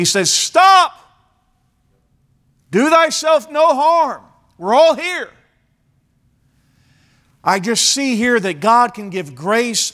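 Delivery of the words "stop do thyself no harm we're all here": very high, loud, carrying shout. Retelling how Paul stopped a man from killing himself, acting out a loud shout. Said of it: "stops him with a loud voice".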